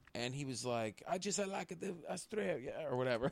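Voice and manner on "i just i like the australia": put-on Greek accent, higher and quieter. Retelling what an old greek restaurant owner said: imitating a greek accent. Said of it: "in his Greek accent".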